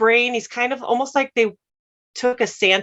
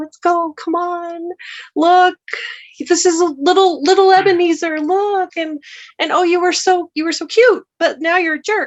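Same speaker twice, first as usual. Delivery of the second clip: gentle, tender, worried, anxious, higher-pitched coaxing voice; 7 semitones higher, 4 dB louder than usual. Retelling a version of the story, imitating the Ghost of Christmas Past, compassionate and worried. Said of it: "the worry is so present in her or his voice".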